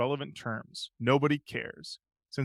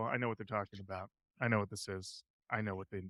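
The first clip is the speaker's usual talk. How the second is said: ordinary delivery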